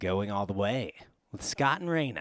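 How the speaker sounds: very deep, low radio announcer voice. Introducing a show with its hosts' names, in a put-on radio voice. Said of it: "I can't not do the radio voice".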